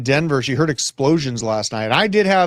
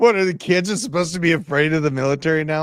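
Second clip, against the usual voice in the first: scornful, put-on, sarcastic mocking tone. Mocking a speech just played, after "He's like": mocking imitation of the speaker. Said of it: "He's like".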